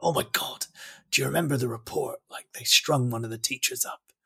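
hushed, whispered voice. Retelling own reply on hearing a school's old name: retelling own hushed tones.

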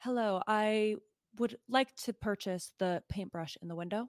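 suddenly bold, very confident, self-assured. Voicing Maria, suddenly switching from cowering to confident: very confident. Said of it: "just goes very confident".

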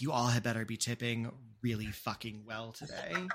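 mock mumbling under breath. Speaker acts out what the person at the front said as couples arrive, retelling a mutter. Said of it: "you hear them mutter under their breath".

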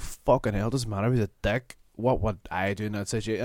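usual speaking voice

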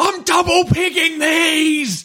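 high screamed words, dragged out. Retelling a man screaming at a woman while hammering in pegs, imitating Peter screaming. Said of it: "he just starts screaming at her".

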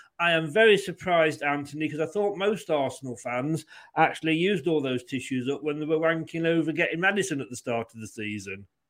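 usual speaking voice

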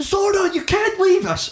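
shrill, very high shout at full force. Retelling how a dying man is shouted at in his face: imitating Kimberly shouting in his face.

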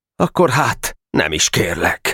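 usual speaking voice

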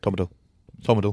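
very rapid delivery. Saying a name the way another speaker suggested: said really quickly. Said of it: "when you say his name really quickly".

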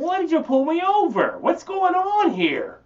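high, loud, mock panic with feigned innocence. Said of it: "That's how I talk to the cops".

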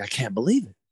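mock huffing and puffing. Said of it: "he's doubled over and he's huffing and puffing".

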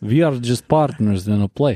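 imitated Ukrainian accent. Retelling what a woman said to you, imitating a ukrainian accent. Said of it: "That's closer".

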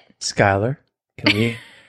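motherly voice, sounding just like a mom. The speaker asks someone to start the episode, sounding like a mom. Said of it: "You sounded like my mom".

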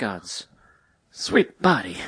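fake offbeat New York accent. Trying the line as another impression: Christopher Walken voice. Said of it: "Or you can go Christopher Walken".

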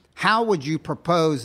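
put-on British accent. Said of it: "they're saying it in a British accent".

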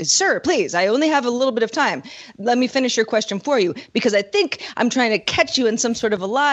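frazzled, flustered, pleading voice. Retelling a hearing where a congressperson pleads for time: imitating a flustered congressperson. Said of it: "congressperson being flustered and say".

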